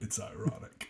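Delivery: breathy, airy, whispered villain voice with much breath. Doing an impression of Palpatine while joking about a good idea. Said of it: "That's my best Palpatine impression".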